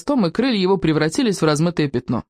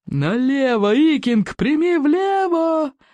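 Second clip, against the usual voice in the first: loud, high-pitched roaring bellow; 8 semitones higher than usual. Narrating a dragon chase over the heather, a character yells directions at a boy: roaring bellow. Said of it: "взревел Плевака крикливый".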